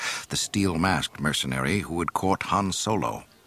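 plain

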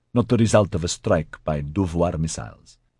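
ordinary delivery

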